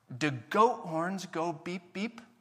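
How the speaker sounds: put-on little three-year-old child voice. Speaker retells what three-year-old Cohen said, in Cohen's little three-year-old voice. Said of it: "in his little three-year-old voice".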